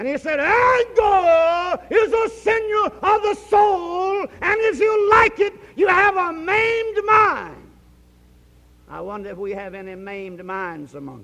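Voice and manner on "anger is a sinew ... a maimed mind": acted, booming, very high, drawn-out preacher's shout. A preacher quotes a man's words on anger, retelling a thunderous shout. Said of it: "shouted out one day in a thunderous voice".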